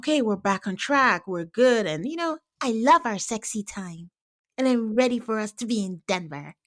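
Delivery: put-on sweet, cutesy, babyish talk. Retelling what a couple said after the meetup: imitating Madison's baby talk. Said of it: "baby talk is high on my wife's list".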